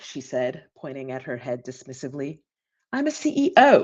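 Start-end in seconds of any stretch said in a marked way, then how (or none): 2.9-3.8 put-on terrible, clumsy English accent. Speaker quotes a team member who is a CEO, in a terrible English accent. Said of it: "Terrible English accent".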